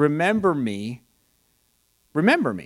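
ordinary delivery

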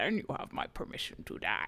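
hushed, breathy, breathed-out whisper. Reading a quote in character: Bane voice. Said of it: "That was just me reading a Bane quote".

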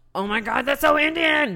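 very high screaming outburst. Retelling how someone reacted while watching the film: imitating someone screaming. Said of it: "Pooja would be screaming out".

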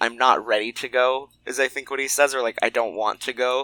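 ordinary talk

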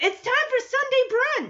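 put-on high, excited kid voice.

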